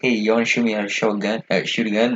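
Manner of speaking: ordinary talk, nothing marked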